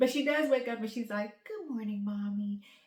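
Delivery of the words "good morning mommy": sweet, gentle voice. Retelling how Harper says good morning on waking, imitating Harper sweetly. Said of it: "she's so sweet and she's such a morning person".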